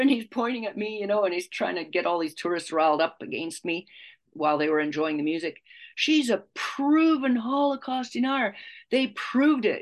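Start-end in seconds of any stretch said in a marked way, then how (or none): 6.0-9.8 mock ranting and raving, loud and high-pitched. Recounting a man accusing her in front of tourists, retelling a loud rant. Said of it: "ranting and raving in a loud voice".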